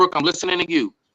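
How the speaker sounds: pressing on, talking over another interrupting voice. Retelling own past words said over another speaker: retelling talking over someone. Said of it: "over top of his voice, I said".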